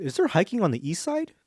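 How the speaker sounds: voice suddenly and unexpectedly jumping high in pitch. Asking others a question mid-conversation, voice suddenly high-pitched. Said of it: "How did my voice get so high all of a sudden?".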